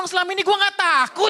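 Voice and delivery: high, loud, indignant outburst.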